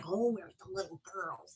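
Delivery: put-on very hushed, low, creepy old-man murmur. Mocking the stranger-in-a-trench-coat stereotype, in a creepy old man voice. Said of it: "a creepy old guy in a trench coat".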